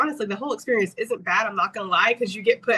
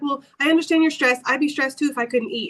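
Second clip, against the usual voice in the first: put-on voice, much higher pitch; 4 semitones higher than usual. Speaker recounting a long wait for a specialist quotes the nurse: imitating the nurse. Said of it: "the nurse is sitting down. She's like".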